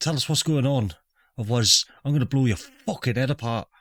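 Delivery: put-on slight Irish accent creeping in. Voicing a rifle-holding character threatening a woman, with a slight Irish accent. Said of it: "he went a bit Irish then".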